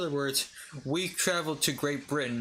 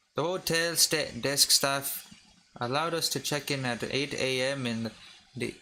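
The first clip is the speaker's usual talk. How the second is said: stumbling read in a put-on stage Irish accent. Reading a passage about a hotel aloud in an irish accent. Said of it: "I'm just gonna read it in an Irish accent".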